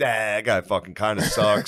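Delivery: put-on drunk-sounding speech. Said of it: "I was, like, hammered".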